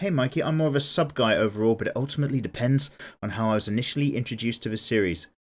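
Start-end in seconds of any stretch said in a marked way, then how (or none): none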